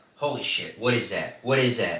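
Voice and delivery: put-on panicked, freaking-out voice. Retelling a caller's call to the cops: imitating someone freaking out. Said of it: "you can hear him kinda freaking out".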